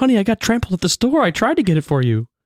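whiny, high-pitched, fast, pleading tone.

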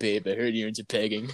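put-on beach bro surfer dude voice. Acting out what a friend would say to someone, in a surfer dude voice. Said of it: "using your surfer dude voice".

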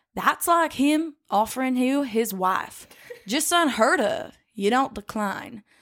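put-on Southern accent.

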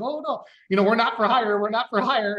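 anxious, nervous tone. Retelling how his dad answered a state trooper at the fuel stop, imitating a nervous dad. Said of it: "my dad got all nervous".

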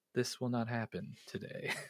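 soft, hushed voice. Retelling how Jesus just walks up and speaks, do your best Obi-Wan Kenobi impression. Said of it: "does his best Obi-Wan Kenobi impression".

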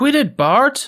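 put-on cartoon kid voice, pitched very high. Told to read each script line in the named character's voice, the player does Lisa Simpson voice.

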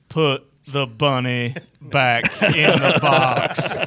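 loud, slow, dragged-out action-hero voice. Answering a request to do Con Air: Nicolas Cage Con Air impression. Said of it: "can you give me a Con Air?".

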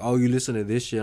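mock taunting, mocking tone. Retelling how a kid at school mocked their music: imitating a bully's taunt. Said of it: "this kid is just straight fucking asshole".

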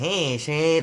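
put-on, overdone, mocking Chicago accent. Mocking how others think Chicagoans talk: mocking Chicago accent. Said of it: "that stupid accent".

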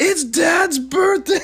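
shrill, very high, thrilled, excited scream. Recounting to the listener how they burst in this morning, retelling a scream. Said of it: "And you just screamed out".

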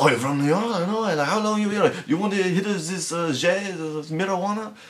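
bad put-on French accent, very high. Imitating people who want to befriend someone from new york, in a bad french accent. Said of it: "that was a bad accent".

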